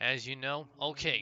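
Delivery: ordinary delivery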